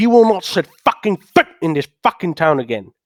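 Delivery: enraged, furious tone. Arguing with another character in a drama scene, angry. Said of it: "Why are you so angry?".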